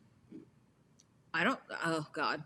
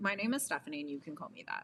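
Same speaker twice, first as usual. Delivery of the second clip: normal talking voice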